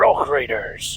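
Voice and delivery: rough, gruff character voice with words blurred together. Repeating the line after advice on the voice: Doc from Lego Rock Raiders voice. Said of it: "There we go".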